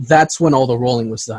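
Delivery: plain reading voice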